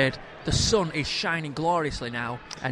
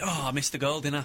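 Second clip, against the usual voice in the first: normal talking voice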